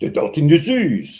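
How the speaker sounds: put-on French accent. Showing how French speakers say the phrase: mock French accent. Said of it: "They say it like this".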